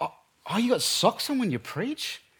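slightly judgy, soft delivery. Speaker quoting the seminar leader's reply to them, mimicking a slightly judgy tone. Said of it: "he said it in a slightly judgy way".

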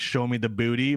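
ordinary talk, nothing marked

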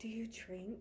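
very quiet hushed whisper. Retelling how the other speaker first asked a question: imitating a whisper. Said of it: "And you whisper in my ear".

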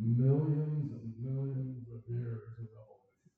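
slow, drawn-out would-be smart drawl. A speaker mocking what secular humans believe: said real slow to sound smart. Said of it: "I'll say it real slow so it sounds real smart".

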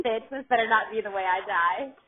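usual speaking voice

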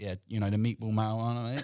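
put-on stoned-sounding voice. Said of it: "I was so wrecked".

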